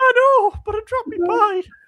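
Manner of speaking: very high, loud fake crying, blubbering. Acting out a teammate crying over a dropped pie: mock crying as Shah. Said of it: "why are you crying".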